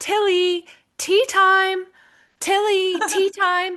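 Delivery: very high calling out, twice. Recalling a woman on the West Highland Way calling her daughter's dog, retelling her yelling. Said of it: "she kept yelling".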